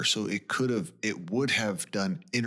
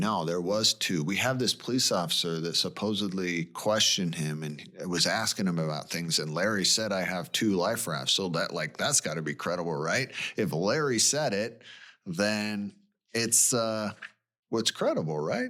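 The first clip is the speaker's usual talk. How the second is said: usual speaking voice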